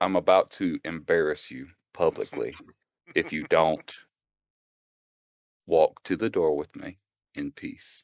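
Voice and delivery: quiet, hushed whisper close to the ear. A player character grips a man's wrist and speaks into his ear, whispering. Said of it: "whisper in his ear".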